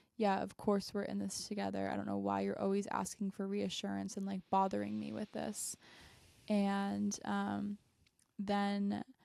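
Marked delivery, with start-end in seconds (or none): none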